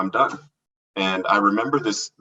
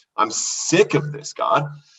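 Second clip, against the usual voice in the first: put-on crying through the words, slow and high; 5 semitones higher than usual. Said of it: "I'm telling him this and crying".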